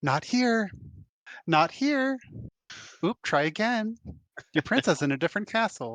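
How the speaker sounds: tiny, small, high-pitched little voices. Player describing a spell's little voices searching each location for the orb, tiny little voices. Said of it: "it's just little voices that go".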